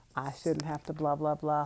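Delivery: ordinary delivery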